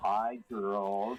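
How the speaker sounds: put-on seductive, sexy voice. Pretending a friend is calling in by phone, greeting the hosts: Chef Michael sexy voice. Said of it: "That that was my best sexy voice".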